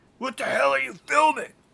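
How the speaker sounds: mock very high-pitched, shrill, rough, angry yell. Retelling a movie scene where a character yells at the cameras: imitating Buck yelling. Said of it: "he's just yelling at the cameras like".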